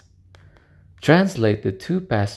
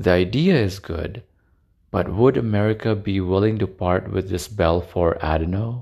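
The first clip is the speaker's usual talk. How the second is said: ordinary talk, nothing marked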